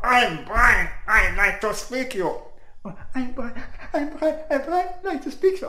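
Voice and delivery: put-on, very, very high-pitched voice. Describing a guy under pressure starting to talk, the speaker imitates him: very high voice. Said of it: "A very, very high voice".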